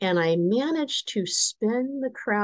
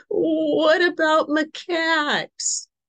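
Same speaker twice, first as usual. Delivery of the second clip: mock quavering, very high voice; 10 semitones higher, 4 dB louder than usual. Retelling asking a question with macaques within biting distance, retelling a quavery voice. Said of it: "so my voice is getting a little quavery".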